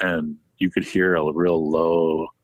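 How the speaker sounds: plain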